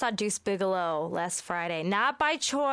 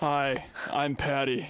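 manly-sounding voice, lower; 6 semitones lower than usual. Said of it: "She may have a masculine voice".

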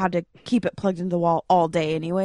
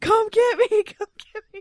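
very high, desperate shrieking scream. Retelling a phone call made from the street, reenacting screaming into the phone. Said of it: "screaming into my phone".

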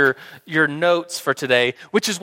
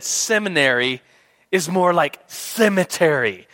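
ordinary talk, nothing marked

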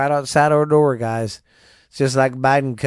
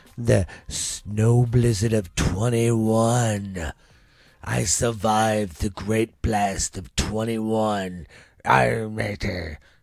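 put-on pirate voice, low and slow; 3 semitones lower, 3 dB quieter than usual. Closing the snow journal recap, jokingly slipping into a put-on pirate voice. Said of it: "I don't know why I fucking did a pirate".

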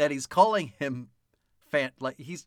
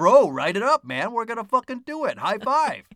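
put-on young boy voice, higher and louder; 6 semitones higher, 4 dB louder than usual. Describing a writing room like a boy factory, imitating a 12-year-old boy. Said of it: "He's like".

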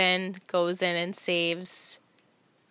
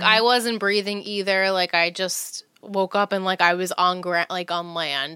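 ordinary talk

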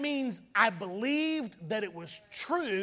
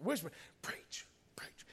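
put-on whisper, much quieter than surrounding speech; 5 semitones lower, 14 dB quieter than usual. Retelling how a man on a Jeep urged you to preach, imitating someone whispering. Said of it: "but he's just whispering".

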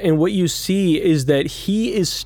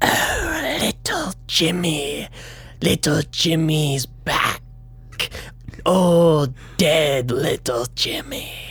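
taunting, mocking spider voice; 3 dB quieter than usual. Speaker telling a comic story in which a spider starts talking: spider voice. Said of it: "You assume it's the spider go".

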